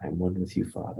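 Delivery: whispering. Showing how the affirmation is said before meditating: whispering. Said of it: "I whisper it".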